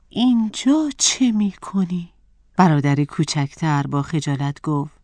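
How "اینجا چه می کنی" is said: anxious, concerned, worried voice, pitched up. A narrator reads a man questioning his trembling younger brother at the door, worried. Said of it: "با نگرانی از او پرسید".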